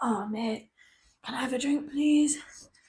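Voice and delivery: soft, barely voiced hoarse whisper. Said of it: "I'm just a little hoarse".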